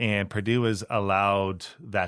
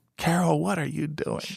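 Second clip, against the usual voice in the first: acted, high, rough-voiced barking coach yell; 8 semitones higher than usual. Retelling how the coach blew the whistle in practice: imitating Gene Keady yelling. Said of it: "starts yelling at me".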